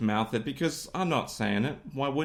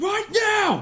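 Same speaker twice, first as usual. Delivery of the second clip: put-on very high, furious child scream. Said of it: "he was so angry".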